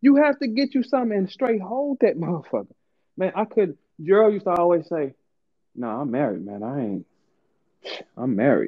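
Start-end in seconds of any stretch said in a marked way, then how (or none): 5.7-8.7 put-on smug, self-satisfied, self-assured tone. Imitating a friend who keeps saying he is married: imitating Gerald sounding smug and safe. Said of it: "he used to say it like... he was so safe".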